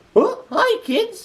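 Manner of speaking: squeaky, very high cartoon voice. Attempting a cartoon impression during a comedy bit, Mickey Mouse voice. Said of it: "let me see if I can do my Mickey Mouse impression".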